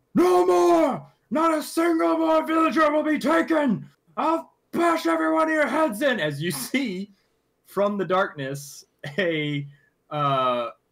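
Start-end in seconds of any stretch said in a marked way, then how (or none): 0.2-6.2 very high, rough, gruff, booming battle shout. Storyteller voicing a dwarf yelling out from the darkness, gruff booming yell. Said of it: "a gruff, booming voice yell out".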